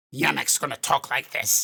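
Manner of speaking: default goblin character voice. Showing the voice planned for the character Yemek, a goblin voice. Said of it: "I have my default goblin voice".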